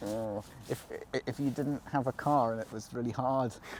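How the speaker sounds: low, soft murmur like dark fantasy game voice. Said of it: "What was that voice?".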